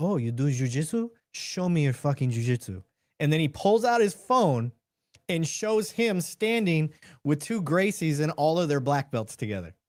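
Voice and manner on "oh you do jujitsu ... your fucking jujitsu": very humble, modest, unassuming voice. Retelling a video where a challenged doorman answers: imitating a humble doorman. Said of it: "all you hear this very humble, uh, doorman say is".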